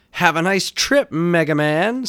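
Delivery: very high, slow, wicked sneer with wicked laugh. The villain taunts a hero who has stumbled: sneering with a wicked laugh. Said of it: "sneered the Prop Top with a wicked laugh".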